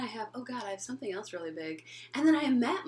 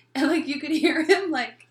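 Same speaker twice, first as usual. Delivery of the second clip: normal talking voice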